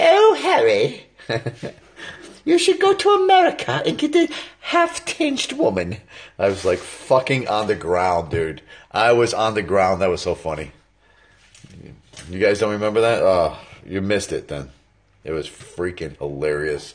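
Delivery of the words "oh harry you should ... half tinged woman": shrill, high, loud, swooping royal voice. Retelling a friend's impression of the Queen talking to Prince Harry: Queen impression. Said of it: "his Queen impersonation".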